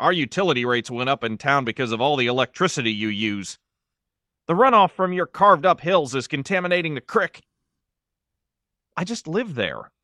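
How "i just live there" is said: soft, defensive tone, fending off. Barry answers an accuser, defensive. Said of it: "Barry said defensively".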